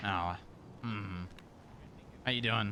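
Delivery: disappointed. Finding out who is in there and greeting them: disappointed. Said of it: "this sounds so disappointed".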